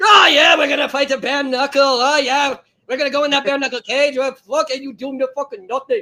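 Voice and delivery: put-on, fake Irish leprechaun accent. Doing his best impression of what a man said, in a leprechaun accent. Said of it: "I'll do my best impression".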